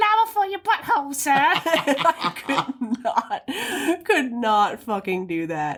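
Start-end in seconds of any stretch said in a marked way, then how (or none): 0.0-1.3 put-on very high, rushed, accented little-girl voice. Recounting a film scene, the speaker imitates a little girl selling Dracula a flower: little girl's accented voice. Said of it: "heard a little girl go".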